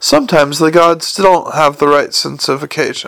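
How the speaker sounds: ordinary delivery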